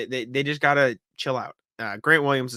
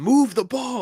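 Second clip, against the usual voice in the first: very high, loud, shrill mock shout; 11 semitones higher, 5 dB louder than usual. Retelling what a player yelled on the sidelines: imitating Marcus Smart yelling. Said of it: "Marcus Smart yelled out".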